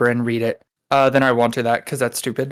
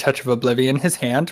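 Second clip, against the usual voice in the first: plain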